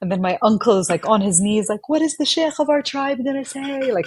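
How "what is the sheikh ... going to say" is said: screaming, high-pitched. Retelling an uncle on his knees at the station: imitating someone screaming.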